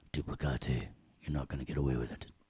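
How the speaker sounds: deep, very low, menacing villain voice. Showing how the word duplicate sounds like a villain, in a villain voice. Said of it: "Doesn't it sound like a villain?".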